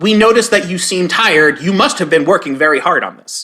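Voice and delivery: normal talking voice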